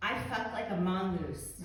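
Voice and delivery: ordinary delivery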